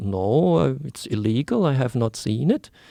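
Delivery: slow, unhurried, put-on Swiss accent. Retelling what an older chemist said: imitating a Swiss accent. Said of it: "in his Swiss accent".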